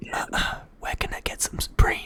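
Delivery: pretend whispering. Acting out asking bubble tea workers for Supreme: put-on whisper. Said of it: "you whisper to them".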